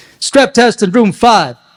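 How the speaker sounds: very loud, barking drill-sergeant voice. Retelling how she gave orders, imitating her military order voice. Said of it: "that's how she gave orders".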